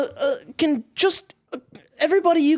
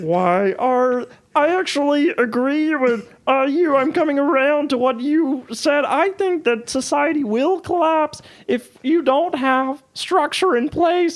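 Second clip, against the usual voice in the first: frog puppet character voice; 2 semitones lower than usual. Doing impressions with others, switching to Kermit: Kermit the Frog voice. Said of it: "I'm gonna do Kermit from here on out".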